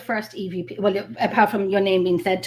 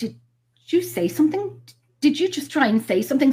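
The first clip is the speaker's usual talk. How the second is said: stammered, stuttering, halting, stop-start words; 6 semitones higher than usual. Retelling asking a presence on the recorder if it spoke: imitating own stuttering. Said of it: "you can hear me stuttering".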